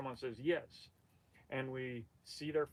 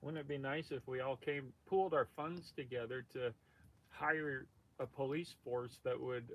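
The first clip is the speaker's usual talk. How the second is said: plain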